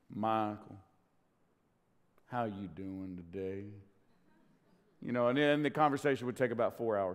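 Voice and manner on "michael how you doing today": slow, stretched-out Southern drawl. Imitating Grandpa greeting Michael during a visit, in a slow southern drawl. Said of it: "spoke with a very slow kind of a southern drawl".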